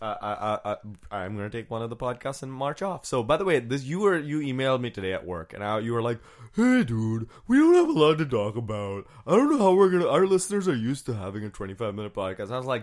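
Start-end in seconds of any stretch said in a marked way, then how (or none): 6.5-12.5 lively, chatty, animated delivery with swooping pitch. Retelling an email from the other speaker, imitating Jeff. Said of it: "that's my impression of you".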